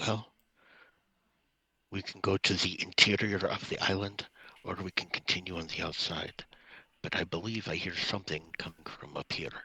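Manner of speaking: very quiet whisper. A player's character quietly gets two companions' attention, a very quiet whisper. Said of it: "Very, very quietly whisper".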